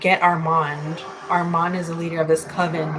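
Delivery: plain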